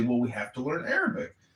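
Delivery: ordinary delivery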